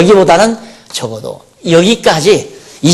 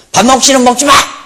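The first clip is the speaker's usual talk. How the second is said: mock-angry, put-on scolding voice, pitched higher; 8 semitones higher than usual. Speaker acts out a mother whose child won't eat, mock-angry scolding mother. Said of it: "엄마가 열을 받는 거예요".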